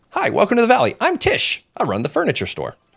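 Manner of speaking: very high, swooping, sing-song character voice. Playing Palia, the speaker reads the lines of Tish, who runs the furniture store: Tish character voice. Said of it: "doing the voices and characters".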